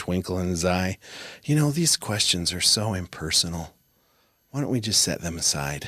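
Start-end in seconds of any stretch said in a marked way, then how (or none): 1.4-5.9 gentle, mild, inspired-sounding tone. Retelling what an interviewer said with a binder: imitating an inspired, soft voice. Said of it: "in his very inspired, soft voice".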